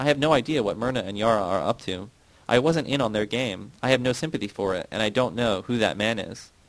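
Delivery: plain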